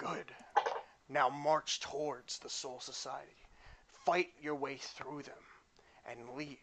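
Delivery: mysterious, disembodied, commanding voice. Voicing a mysterious voice that calls to a player again: mysterious voice commanding. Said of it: "the voice calls you once more".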